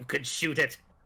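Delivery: put-on cartoon character voice. Quoting a cartoon show when asked to do the voices: Charlotte voice. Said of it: "You have to do the voices for the characters".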